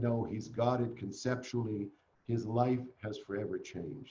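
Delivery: ordinary talk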